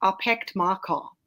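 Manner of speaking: thick, strong South African accent. Joking about how "park my car" sounds, in a strong South African accent. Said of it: "That's the proper South African accent. That's when it gets really, really strong".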